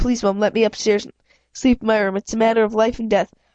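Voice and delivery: ordinary delivery, nothing marked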